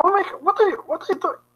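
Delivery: very high, short, disbelieving yelp. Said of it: "it sounds like it's an incredulous, um, mini scream".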